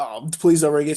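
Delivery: put-on pleading voice. Retelling a wrestling match, quoting The Miz begging the referee. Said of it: "he's begging for the ref".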